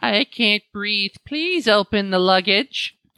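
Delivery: put-on eerie, creepy small-child voice. Retelling a scene of kidnapped children, in a creepy little kid voice. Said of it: "it's like a little kid voice".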